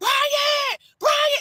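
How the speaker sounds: mock, very high, shrill, piercing, urgent yell. Retelling blowing the horn to wake someone upstairs while being arrested, retelling a yell. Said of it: "like literally yelling and blowing the horn".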